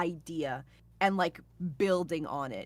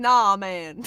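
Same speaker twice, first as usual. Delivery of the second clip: put-on Jamaican accent, louder; 11 dB louder than usual. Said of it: "doing the whole thing with, like, a Jamaican accent".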